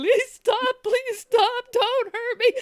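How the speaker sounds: put-on tearful crying voice, high and loud. Retelling a battle while in character, imitating a crying plea. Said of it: "I'm just gonna start crying and slashing".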